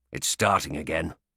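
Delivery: growling bitterly. Narrator reading the wolf's line as snow starts falling: bitter growl. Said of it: "he growled bitterly".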